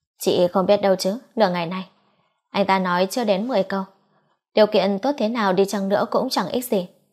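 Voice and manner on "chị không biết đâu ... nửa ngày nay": ordinary delivery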